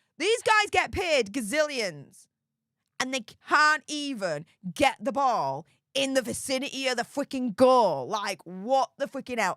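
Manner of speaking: worked-up, exasperated, heated angry rant. Complaining about their team's missed chances in the playoffs, in a heated, angry rant. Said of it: "I'm getting really, really heated now".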